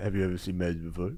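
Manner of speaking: low, flat, monotone magician voice. Retelling a magic street performance, imitating David Blaine: monotone David Blaine voice. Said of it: "in his monotone fucking, you know, pedo voice".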